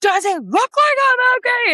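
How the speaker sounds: mock very high, loud wailing through sobs. Retelling a woman asking if she's okay, the speaker re-enacts her own sobbing reply. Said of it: "I'm sobbing".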